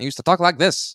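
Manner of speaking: put-on old-timey transatlantic accent. Joking about old radio days, showing off an old transatlantic accent. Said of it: "Back with my transatlantic accent".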